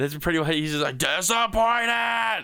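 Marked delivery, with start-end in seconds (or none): 1.0-2.4 "disappointed" shouted, yelled loudly. Describing someone who screamed the script's word, yelled disappointed. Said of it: "he yells disappointed".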